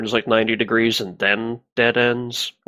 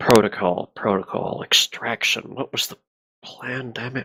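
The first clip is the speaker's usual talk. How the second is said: low mutter under the breath. Muttering in character to jog the ride's memory: muttering under breath. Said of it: "I mutter under my breath".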